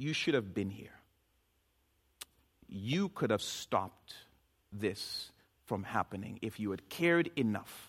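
put-on disappointed tone. Retelling Martha's words to Jesus: disappointed tone, voicing Martha. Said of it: "you can hear the disappointment in her tone".

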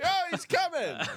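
very high, put-on Brooklyn townie character voice. Doing a character bit about Louis's jokes, in woke Brooklyn townie voice. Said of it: "What character are you doing right now?".

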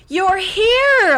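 very loud, very high, glad happy cry. Narrator reading a little voice behind the littlest alumnus, crying happily. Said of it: "a little voice behind him cried happily".

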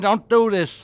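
put-on begging voice. Begging a producer not to stay on, comedy bit: mock pleading. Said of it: "I'm begging you".

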